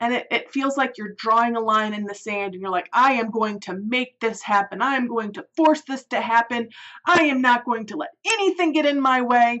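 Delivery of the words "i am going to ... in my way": loud, bold, proud near-yell. Acting out someone declaring a big goal: imitating someone yelling a bold vow. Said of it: "you're almost yelling about it".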